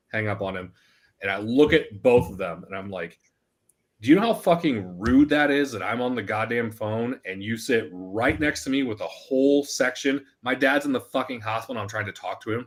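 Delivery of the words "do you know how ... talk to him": normal talking voice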